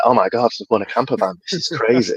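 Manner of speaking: shaken, stunned, disbelieving outburst. Retelling hearing about winning a camper van: retelling own shocked reaction. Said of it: "started shaking, went into shock".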